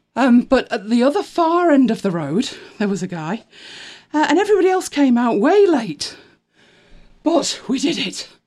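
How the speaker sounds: puffing, winded, breathless speech. Recounting the evening just after running up and down the stairs, out of breath. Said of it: "as you can tell, I'm out of breath running up and down the stairs".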